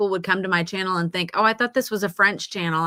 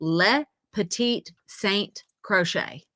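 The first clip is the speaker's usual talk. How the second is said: very slow, Americanized pronunciation of a French name. Recalling a french name they cannot pronounce: american pronunciation of french name. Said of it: "I'm gonna say it the American way".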